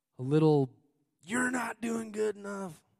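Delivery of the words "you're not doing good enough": sudden put-on southern cowboy accent, pitched up. A preacher mid-sermon voices a thought: sudden cowboy accent. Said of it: "I don't know where that accent came from".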